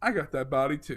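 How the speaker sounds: usual speaking voice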